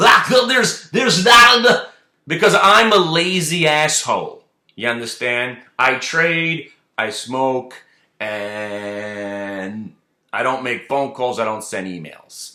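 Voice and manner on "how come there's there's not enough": very high, very loud, hopped-up, wound-up rant. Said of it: "I just did Bill Cosby on crack to do that voice".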